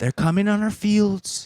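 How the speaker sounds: loud, high announcing voice. Quoting a Trump talk he was listening to: imitating Trump. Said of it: "he's like".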